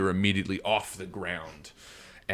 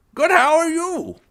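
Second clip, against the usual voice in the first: put-on very shrill, very loud, high elderly man voice; 10 dB louder than usual. Voicing an old man who greets the four players: old man voice. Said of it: "you hear an old man".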